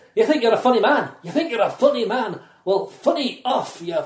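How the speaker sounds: put-on thick Scottish accent. Retelling what a woman, Tara, said to him, in Tara's heavy Scottish accent. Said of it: "she had a very kind of heavy Scottish accent".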